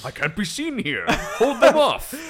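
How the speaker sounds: thick, shrill, blaring voice, pitched high. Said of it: "trying to do Thorne's voice".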